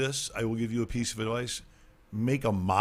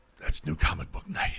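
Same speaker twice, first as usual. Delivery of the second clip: put-on rough, creaky, raspy voice; 5 semitones lower than usual. Joking about comic books, saying a line in Darth Vader voice. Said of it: "Immediately go into the Darth Vader voice".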